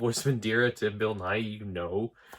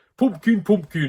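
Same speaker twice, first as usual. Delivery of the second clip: put-on old English granny voice, high, loud, pitched up; 8 semitones higher, 8 dB louder than usual. Describing a performer's voice for a favourite character, old English granny Nanny Ogg. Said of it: "what an old English granny would sound like".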